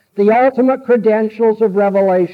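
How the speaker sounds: usual speaking voice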